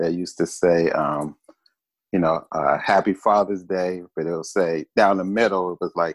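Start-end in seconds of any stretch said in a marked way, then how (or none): none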